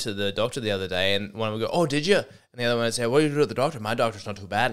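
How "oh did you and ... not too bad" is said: put-on Irish accent. Imitating hecklers at a comedy gig: accidentally Irish accent. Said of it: "I know that was Irish".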